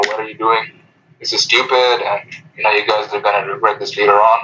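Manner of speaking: ordinary talk, nothing marked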